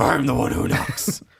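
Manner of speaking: rough, creaky, raspy put-on voice.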